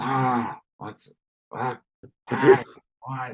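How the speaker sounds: rough, ground-out, all-gravel voice. Mocking a politician's voice as Patty and Selma's brother: Robert Kennedy gravel voice. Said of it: "Patty and Selma's long lost brother".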